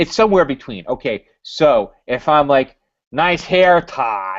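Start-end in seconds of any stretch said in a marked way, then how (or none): 3.1-4.4 mocking, sarcastic tone. Explaining what sarcasm means, the speaker gives an example in a sarcastic tone. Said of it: "then that is sarcastic".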